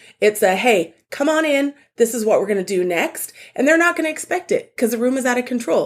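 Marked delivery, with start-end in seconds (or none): 0.6-3.3 loud, strong and clear, slower. Showing how to address a room that is out of control: loud, strong, clear. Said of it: "loud enough to force everyone to look at you".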